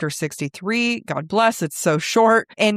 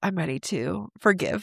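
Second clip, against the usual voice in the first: put-on all zen voice, quieter; 7 dB quieter than usual. Imagining the other character staying calm: imitating Nesta all zen. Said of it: "all zen".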